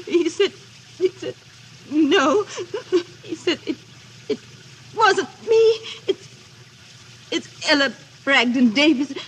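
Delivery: crying, tearful weeping. A woman, told to stop crying, recounts being jilted; crying. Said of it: "woman recounts being jilted, told to stop crying".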